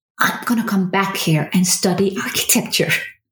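imitated whisper. Retelling a childhood vow made alone on a square: retelling a whisper. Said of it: "whispered to myself".

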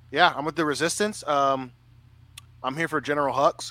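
plain

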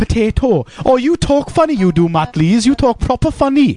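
put-on high, chattering Welsh accent. Asked to say potato in a Welsh accent, showing a Welsh accent. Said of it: "That's a Welsh accent".

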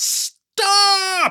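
screamed, very high pitch. The narrator screams at her as her hand reaches for the door, screamed. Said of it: "I screamed".

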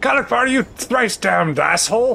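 furious acted outburst.

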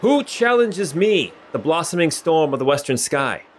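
high-pitched calling out in a put-on voice. Voicing a duelist calling out to people approaching: calling out in character. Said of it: "he calls out".

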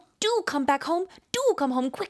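put-on British accent. Describing a british movie, the speaker imitates the woman in it: imitating a british accent. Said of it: "it's so British".

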